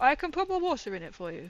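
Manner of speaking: usual speaking voice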